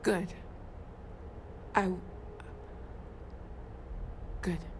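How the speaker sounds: on the verge of crying. A character told the hunter came after them answers on the verge of crying. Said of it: "I'm gonna start crying".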